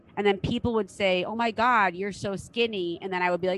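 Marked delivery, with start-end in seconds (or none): none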